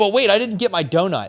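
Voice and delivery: put-on high, loud little kid voice. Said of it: "be like".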